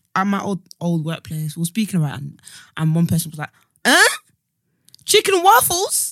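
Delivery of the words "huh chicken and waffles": put-on American accent, very high, drawn out. Retelling a coworker's reaction to a food: put-on American accent. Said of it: "Why did you give them a, an American accent?".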